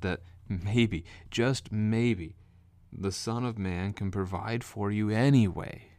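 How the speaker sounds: slow, heavy, dry, mocking sarcastic tone. Retelling Jesus rebuking the disciples over forgotten bread: sarcastic. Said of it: "And I say that sarcastically".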